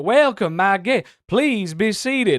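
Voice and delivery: polite, courtly Southern accent. Showing how a southern accent sounds at a dinner party, polite regal southern accent. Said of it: "the southern accent can sound very regal".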